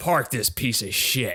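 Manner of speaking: acted, venomous, contemptuous delivery. Quoting a line from an actor's movie role, imitating a venomous line. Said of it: "done with so much venom in his voice".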